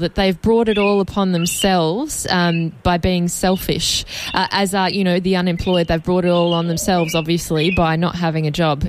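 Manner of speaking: plain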